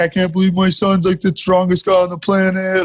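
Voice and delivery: tearful crying voice, talking through sobs. Retelling how dad called mom after being knocked out: imitating dad crying. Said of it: "he called my mom crying, like".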